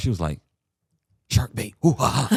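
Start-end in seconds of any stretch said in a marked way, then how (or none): 1.3-2.4 put-on whisper, higher. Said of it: "trying to whisper it".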